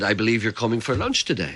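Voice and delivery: ordinary talk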